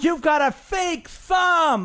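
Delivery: put-on kid's high, slow, drawn-out yell at full volume.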